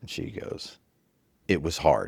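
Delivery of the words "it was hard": put-on straight, dead-serious deadpan, no laughter. Retelling what the partner's mother said when asked: imitating a deadpan reply. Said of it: "she looks at me with a straight face".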